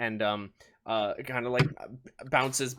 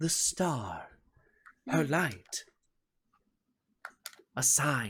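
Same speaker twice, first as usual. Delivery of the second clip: put-on voice of an older woman; 3 dB quieter than usual. Narrating a story scene where a character speaks, in an older woman's voice. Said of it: "says in an older woman's voice".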